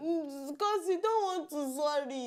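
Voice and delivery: crying while talking. Answering the other speaker who asks why they are crying: crying while talking. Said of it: "why are you crying?".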